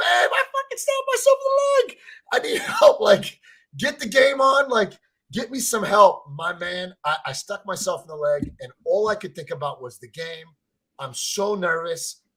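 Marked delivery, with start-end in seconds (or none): 0.0-6.2 very high, shrill, swooping scream. Retelling stabbing oneself in the leg, calling for help: imitating own past scream. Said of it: "I'm screaming like".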